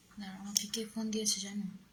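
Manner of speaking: fast, hushed, unvoiced whisper.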